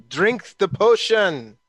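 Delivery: called out loudly. Voicing Uzo calling across a fight to drink a potion: screaming. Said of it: "Uzo screams through that".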